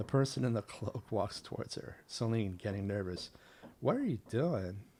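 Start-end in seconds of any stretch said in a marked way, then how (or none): 3.8-4.8 put-on, played-up Valley Girl speech. Narrating a story as a cloaked figure walks toward Celine: Celine in Valley Girl voice. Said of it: "I'm putting on the Valley Girl voice".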